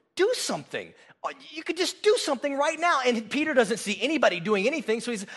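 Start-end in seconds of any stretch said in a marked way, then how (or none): 0.2-3.0 mock frustrated, high swooping, urging tone. Retelling Peter urging Jesus to act in the garden: imitating frustrated Peter. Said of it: "Peter is so frustrated".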